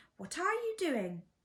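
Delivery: put-on piercing, shrill, high-pitched old woman's calling voice. Reading a story, voicing Grandma calling to George from the next room: shrill voice. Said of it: "came the shrill voice from the next room".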